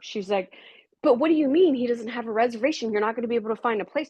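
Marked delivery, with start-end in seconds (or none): 1.0-4.1 fast, frantic, panicked freaking-out outburst. Retelling how the mother reacted to no reservation: imitating someone freaking out. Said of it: "she's freaking out".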